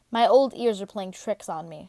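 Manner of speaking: ordinary delivery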